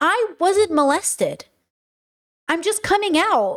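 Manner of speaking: put-on crying through each word, slow and tearful. Retelling a family member's response to coming out: retelling own tearful words. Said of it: "And I'm crying and I'm like".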